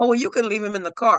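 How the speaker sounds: put-on sassy, dismissive, snippy tone full of attitude. Retelling a phone call with a woman: imitating someone with attitude. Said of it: "she said it with such attitude".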